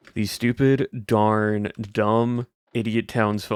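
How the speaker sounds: flat, monotone whisper. Showing how an earlier voice recording sounded: imitating own monotone whisper. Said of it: "I was just so monotone and whispering it".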